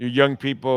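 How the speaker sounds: usual speaking voice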